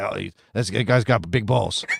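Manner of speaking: gruff, growling, rough-edged voice. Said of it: "it would be this gruff".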